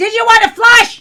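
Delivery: very high, very loud, shrill, booming, swooping hollering. Retelling how she was yelling at the speaker: retelling her yelling. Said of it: "Then she's yelling at me".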